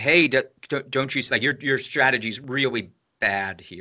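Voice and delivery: ordinary talk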